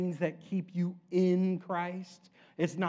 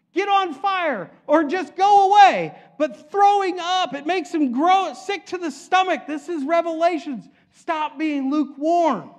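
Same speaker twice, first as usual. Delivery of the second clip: loud raised-voice shout; 10 semitones higher, 10 dB louder than usual. Preaching to listeners from Revelations, yelling. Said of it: "And I'm yelling because I know it's me".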